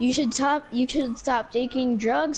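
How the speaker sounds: ordinary delivery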